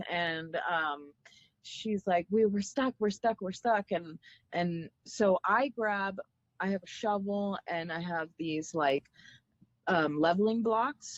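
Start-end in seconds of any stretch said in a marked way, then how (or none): 2.3-3.9 beautiful, thick put-on Italian accent, rattled off. Retelling what a stranded woman outside the rv said, in a thick italian accent. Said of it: "beautiful, thick Italian accent".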